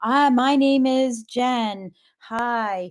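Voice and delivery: mechanical, robotic, robot-like delivery. Retelling starting a speech while someone was watching, mechanical robotic delivery. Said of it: "I became this robot".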